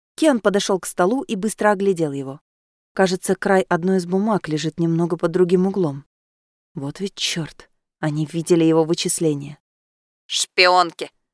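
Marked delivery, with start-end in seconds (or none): 10.3-11.1 contemptuous, scornful, disdainful. A raven comments to a man whose papers were looked at, contemptuous. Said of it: "презрительно высказался Джон Ди".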